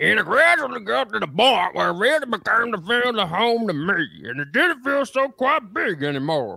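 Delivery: very high, slow Baton Rouge drawl. Reading a ballplayer's quote aloud: Baton Rouge accent. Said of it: "Good Baton Rouge, uh, accent".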